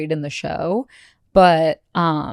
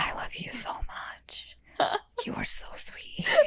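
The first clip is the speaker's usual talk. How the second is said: slow, soft, breathy whisper; 13 dB quieter than usual. Imitating the couple at their reveal: imitating a whisper. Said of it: "why were they whispering so much?".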